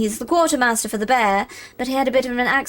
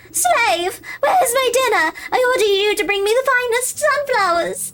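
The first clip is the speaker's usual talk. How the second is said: very high, piercing, shrill queen voice; 13 semitones higher, 3 dB louder than usual. A narrator reads a voice that pierces the meadow: shrill voice. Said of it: "A shrill voice pierces the meadow".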